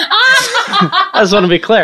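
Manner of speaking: high, slow voice, laughing while talking.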